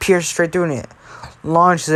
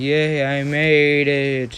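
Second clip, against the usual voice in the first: weary deadpan sarcastic monotone, very slow and drawn out. Retelling a story where Deku reads his acceptance letter: imitating sarcastic, tired Deku. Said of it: "all sarcastically and, like, tired-like".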